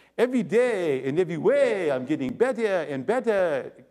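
exaggerated fake French accent laid on thick. Quoting a self-help phrase from its originator, in an exaggerated Clouseau French accent. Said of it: "I'm tempted to do it with the French accent".

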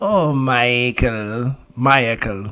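sitcom mom voice, calling out. Imagining the talking car speaking as Esther Rolle: Esther Rolle voice. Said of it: "I would want her to be like".

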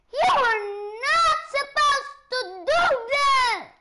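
very high, very loud, shrill shout. Streamer playing a game, shouting. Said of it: "I'm shouting too much".

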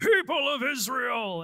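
loud, grave, serious declaiming voice. Describing a kid-friendly biblical show, the speaker does an Ed Asner as Joshua impression. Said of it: "Ed Asner is the voice of Joshua".

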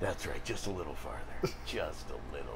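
low, soft, sneaky villain murmur.

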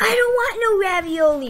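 outright, high-pitched yelling. Acting in a skit, refusing ravioli: yelling. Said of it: "Are you seriously yelling at me?".

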